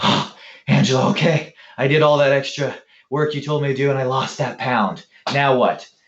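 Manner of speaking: put-on breathless panting. Retelling how she comes back after extra exercise: imitating someone out of breath. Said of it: "literally out of breath".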